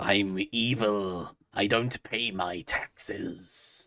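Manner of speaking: deep, low voice, dragged out slowly. Voicing a skull toy asked to confess misdeeds: Evil Shadow Skull voice. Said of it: "That was evil shadow skull talking".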